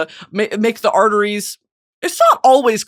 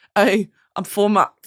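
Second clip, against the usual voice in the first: put-on nervous-sounding voice. Trying the bit again, the speaker does a nervous SD Kid impression. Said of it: "if he got a little nervous sometimes".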